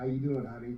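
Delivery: put-on American Southern accent. Retelling meeting Rogue at Universal Studios: imitating Rogue's Southern accent. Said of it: "she had a Southern accent".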